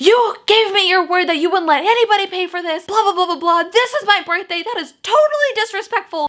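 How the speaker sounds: very high, loud, irate yelling. Retelling how an angry customer yelled at a coworker: imitating a customer yelling. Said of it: "yelling at my coworker".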